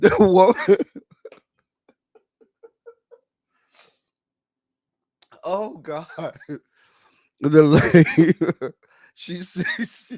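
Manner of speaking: laughing while talking. Trying to tell what the lady said, laughing while talking. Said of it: "I'm trying not to laugh, y'all".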